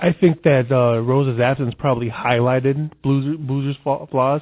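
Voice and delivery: very loud, stumbling stutter, tripping over words. Mid-discussion, the speaker admits to stuttering tonight; stuttering. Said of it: "I'm stuttering tonight".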